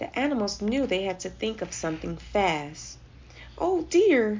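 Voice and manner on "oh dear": anxious, fretting, worried cry, high and raised. Reading a children's story aloud, voicing the giraffe, worried. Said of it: "worried the giraffe".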